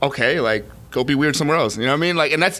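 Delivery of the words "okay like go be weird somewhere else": usual speaking voice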